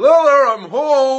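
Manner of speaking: high, yelled, called-out delivery. Arriving home late to the cabin and calling out: yelling. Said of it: "No need to yell".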